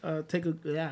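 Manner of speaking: stuttering, stammering over words. Trying to introduce upcoming matches to the others: stuttering. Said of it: "I'm stuttering now, you hear me?".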